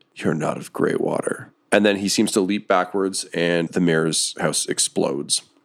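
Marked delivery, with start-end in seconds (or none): 0.2-1.5 very soft, low, quiet voice. Narrating, voice a distant man standing atop the mayor's mansion: very soft voice. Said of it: "You can just hear a very soft voice".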